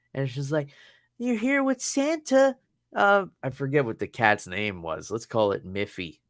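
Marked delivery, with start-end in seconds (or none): 1.2-2.6 put-on very high-pitched, cooing baby talk. Retelling a woman posing her cat with santa, imitating talking to a child. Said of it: "talking to the cat like it's a child".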